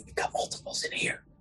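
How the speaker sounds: whispered speech. Passing a remark to the others in the group, whispering. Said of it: "Now I'm whispering to them".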